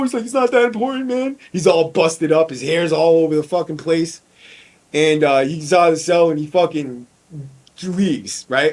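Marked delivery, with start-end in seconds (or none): 0.2-1.4 raised, mock near-tearful voice. Retelling a jail confrontation, the speaker acts out a scared kid who is imitating someone almost crying. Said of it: "this kid starts like almost crying".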